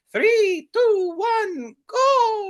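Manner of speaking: very high, loud cartoon voice, "go" swooped up and stretched. Reading a game's official description aloud to listeners: Mario voice. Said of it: "That was a good Mario voice".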